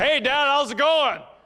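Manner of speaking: play-acted over-loud yelling, very high. Imitating a teenage son greeting his dad in public: imitating son yelling. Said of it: "it's like he's yelling at".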